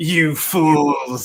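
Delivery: low, put-on kids' TV villain voice. Rereading someone's "you fools" message in a Power Ranger voice. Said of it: "I read that in a Power Ranger voice".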